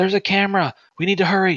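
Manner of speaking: very high, loud shouted cry. Voicing a character warning the group about a camera: character shouting a warning. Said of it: "Mito kinda shout from the back and goes".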